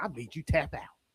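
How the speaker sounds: put-on Southern accent from Georgia. Speaker imagining AJ gloating after beating Gunther in a match, AJ impression. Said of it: "because that's how AJ sounds".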